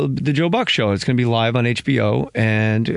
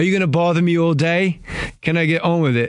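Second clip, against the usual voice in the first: put-on clumsy Australian accent, pitched up; 5 semitones higher than usual. Retelling what David Hill said after changing the figure in his book: terrible Australian accent. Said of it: "terrible Australian accent".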